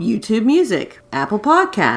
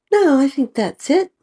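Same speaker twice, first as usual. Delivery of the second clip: Southern belle voice, much higher; 6 semitones higher than usual. Asked for anything else before wrapping up, answering in a Scarlett O'Hara Southern Belle voice. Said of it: "Breaking out the Southern Belle voice there".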